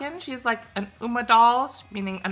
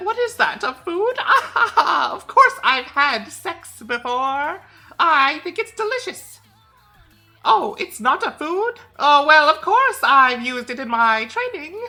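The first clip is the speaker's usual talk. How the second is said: put-on high, slow, bratty, clueless little kid voice; 5 semitones higher, 4 dB louder than usual. Acting out how a clueless character would answer a question: acting out a clueless bratty child. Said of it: "And she'd be like".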